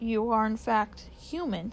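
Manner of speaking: ordinary delivery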